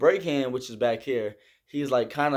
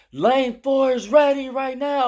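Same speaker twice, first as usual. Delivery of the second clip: put-on very high, loud, called-out yell; 12 semitones higher, 5 dB louder than usual. Retelling signaling down from a tower to the lane below: retelling a yell. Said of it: "I had to yell down at them".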